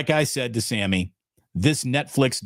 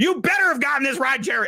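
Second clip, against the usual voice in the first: scream, much higher; 12 semitones higher than usual. Speaker recalling a coach screaming at the man beside him at a press conference, Barry Switzer screaming impression. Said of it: "He's screaming at the".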